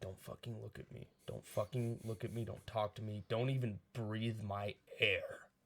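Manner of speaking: put-on sulking, pouty prima donna voice. Retelling how the lead actor acted between takes: imitating a pouty actor. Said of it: "go back to his pouty".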